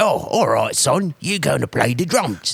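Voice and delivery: put-on strong Cockney accent. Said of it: "he's got just a right Cockney accent".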